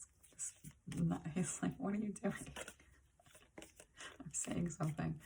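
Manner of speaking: talking through laughter. Describing what John says during a reading, laughing while talking. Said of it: "sorry, laughing".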